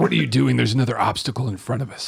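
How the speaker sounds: poor attempt at a stage whisper. Arguing with a teammate in a game over goggles: bad whisper. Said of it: "Worst whisper ever".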